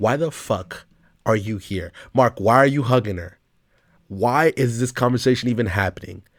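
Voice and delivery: put-on frustrated outburst. Retelling a past reaction while watching the show: retelling a frustrated outburst. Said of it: "I'm getting so freaking frustrated".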